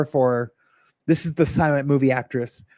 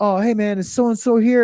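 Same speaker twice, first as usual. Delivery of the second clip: imitated stoned voice, higher; 6 semitones higher than usual. Retelling a visitor at the door asking for someone: imitating Willis high. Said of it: "he was high A F".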